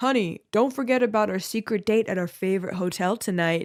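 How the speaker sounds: funny put-on accent, aged-up, older-sounding voice. Retelling a prank call, imitating Joe's funny older-sounding accent. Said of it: "he'd put on a funny accent to make himself sound older".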